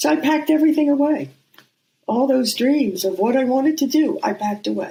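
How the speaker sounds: teary, close to crying. Recalling packing away her dreams because of her mother, on the verge of tears. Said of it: "I'm going to cry".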